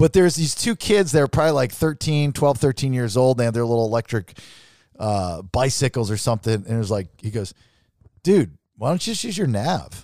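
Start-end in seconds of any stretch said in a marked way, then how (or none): 8.2-10.0 put-on child's voice sounding grown-up, adult-like. Retelling what a young kid said to them: imitating a kid talking like a grown-up. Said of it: "they were talking like grown-ups".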